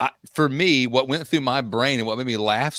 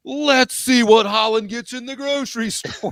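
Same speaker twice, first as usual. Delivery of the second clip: mock very high, loud, booming podcast-intro announcer delivery; 10 semitones higher than usual. Teasing a co-host about loud podcast intros, imitating loud talking. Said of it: "get so much louder?".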